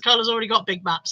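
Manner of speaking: plain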